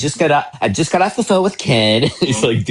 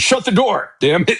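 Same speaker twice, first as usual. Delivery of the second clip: shrill high-pitched yell; 9 semitones higher than usual. Retelling how a mother sounds with her kids: imitating someone yelling. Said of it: "you hear her yelling at her kids".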